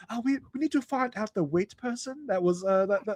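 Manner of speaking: failed attempt at English accent. Imitating the hostess's line: bad British accent. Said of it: "I can't do a British accent apparently right now".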